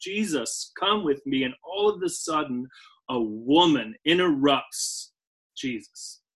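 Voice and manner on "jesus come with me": put-on imploring, desperate pleading tone. Retelling a desperate father begging Jesus to come: imitating an imploring plea. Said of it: "you can kinda hear it in his voice as he's imploring him".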